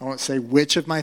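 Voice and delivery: ordinary delivery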